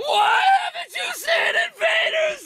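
very loud, very high, slow, drawn-out shrieking scream. Asked about Invader Zim, imitating Viv screaming. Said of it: "that's exactly what she sounds like".

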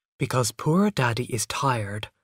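ordinary delivery

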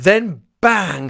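ordinary delivery

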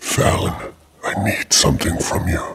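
ominous, whispered, raspy demon voice.

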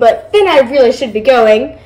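ordinary talk

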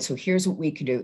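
normal talking voice

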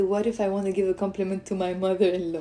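plain

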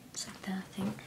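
soft, hushed whisper. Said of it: "Sorry, I'm whispering".

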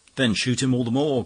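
very loud, high, exasperated, impatient outcry. The poet answers Ezra, crying out impatiently. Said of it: "cried the poet impatiently".

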